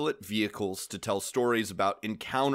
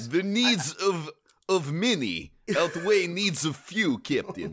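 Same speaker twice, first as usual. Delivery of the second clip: put-on Russian accent, pitched up; 8 semitones higher, 4 dB louder than usual. Joking about Vulcans speaking with a Russian accent: Vulcan with Chekhov Russian accent. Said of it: "they would all sound like Chekhov".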